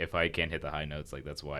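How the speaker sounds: ordinary delivery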